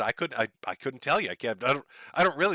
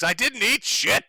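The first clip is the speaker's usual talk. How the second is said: all-out, very high, shrill, top-of-lungs scream; 9 semitones higher, 5 dB louder than usual. Joking about a neighbor overheard at dinner, imitating an american man screaming. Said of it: "screaming at the top of his lungs".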